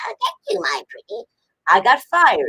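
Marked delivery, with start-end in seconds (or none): 0.1-1.2 very high, rough voice. Telling how she voiced a witch for a job, doing the Wicked Witch of the West voice. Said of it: "So I did it like the Wicked Witch of the West".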